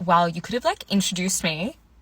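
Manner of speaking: put-on unkind tone. Retelling what a date said walking out of bowling, imitating an unkind remark. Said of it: "if he said it in a nicer way".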